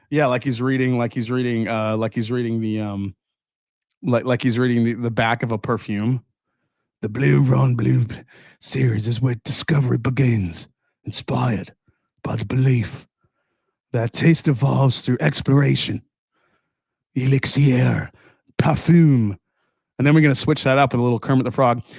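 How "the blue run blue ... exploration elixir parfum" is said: put-on French accent voice. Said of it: "can you do that in your Johnny Depp voice".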